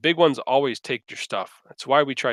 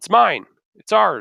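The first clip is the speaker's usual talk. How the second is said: greedy, high, raised, possessive little voice; 6 semitones higher, 6 dB louder than usual. Narrator voices small figures clutching statuettes as they answer the players: greedy. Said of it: "kind of greedily respond".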